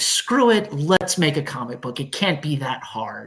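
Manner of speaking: plain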